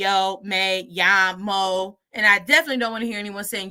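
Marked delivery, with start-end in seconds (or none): 0.0-2.0 choppy, flat, low robot voice. A Spanish teacher shows how not to say a phrase: robot voice. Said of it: "I'm not robot saying yo".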